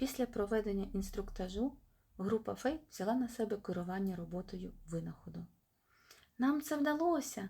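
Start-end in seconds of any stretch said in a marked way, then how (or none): 6.4-7.5 high cry yelled out at full voice. Reading a fairy as the last gathered riches are poured out, shouting. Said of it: "закричала Іредеса".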